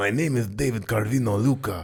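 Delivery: spoken with a Spanish accent. Speaker asking who comes to mind for that voice, doing an Inigo Montoya Spanish accent. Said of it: "when you think of that voice".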